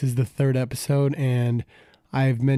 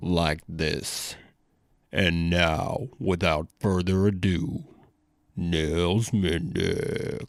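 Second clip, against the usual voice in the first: exaggerated put-on bass voice, very low; 8 semitones lower, 3 dB quieter than usual. A podcast host with a cold introduces the guest: really deep voice. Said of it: "I can have a really deep voice".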